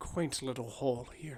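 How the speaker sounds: very quiet, low muttering under the breath. Voicing a character entering an old mine: muttering to himself. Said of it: "Muttering to himself".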